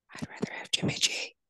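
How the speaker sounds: secretive, soft, hushed whisper. Admitting a quarterback preference during a football debate: whispering. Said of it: "I'm gonna whisper this".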